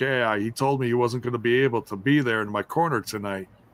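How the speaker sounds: normal talking voice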